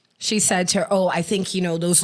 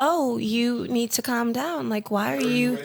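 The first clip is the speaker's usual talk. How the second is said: mock calm voice, higher; 5 semitones higher than usual. Retelling a friend's passive aggressive reply: imitating a friend talking calmly. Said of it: "she come right down".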